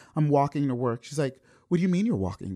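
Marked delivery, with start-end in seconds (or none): 1.7-2.6 fast, fearful, worried, alarmed delivery. Retelling what she asked on an early-morning call, imitating her fearful voice. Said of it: "you hear it in her voice".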